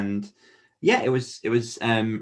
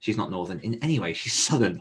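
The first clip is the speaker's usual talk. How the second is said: ordinary talk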